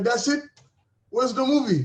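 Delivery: put-on Haitian accent. Retelling grandma's reaction after watching the short film, imitating grandma's Haitian accent. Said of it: "she's Haitian, she's got her, her accent".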